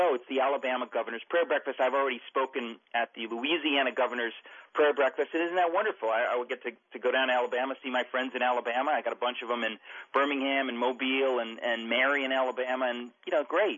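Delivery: plain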